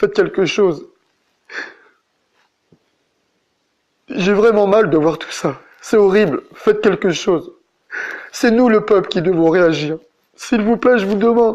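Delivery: tearful, crying voice. Speaker pleading with the people to act, crying. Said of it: "Je pleure pas parce que je veux pleurer".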